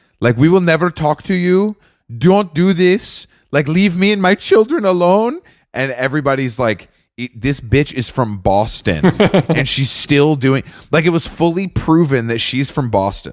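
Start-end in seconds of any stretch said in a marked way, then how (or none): 0.4-5.4 complete fake Spanish accent, higher pitched. Mocking a woman proven to be from Boston, the speaker quotes her in a fake Spanish accent. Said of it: "she does the full accent, like her full Spanish accent".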